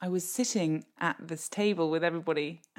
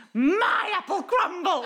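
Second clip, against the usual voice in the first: shrill, very high-pitched squawking cry; 14 semitones higher, 6 dB louder than usual. Retelling a panicked outburst at a table: squawking. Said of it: "I literally squawked".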